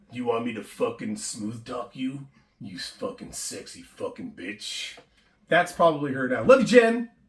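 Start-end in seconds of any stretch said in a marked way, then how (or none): 0.1-4.9 whispered, hushed, breathy smoker's voice. Picturing how a woman they knew sounds now, imitating Jen's smoker voice. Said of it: "she's probably got a little bit of a voice like this".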